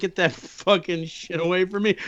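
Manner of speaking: loud emotional burst. Retelling own past reply to a roommate's casserole, imitating own past words. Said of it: "And I'd be like".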